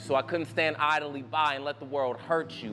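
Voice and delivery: normal talking voice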